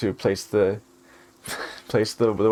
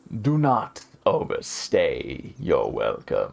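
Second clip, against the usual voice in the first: low, swooping, rumbling voice; 5 semitones lower than usual. Voicing someone speaking from the shadows, low rumbling voice. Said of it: "a low voice rumbles from the shadows, about an octave lower".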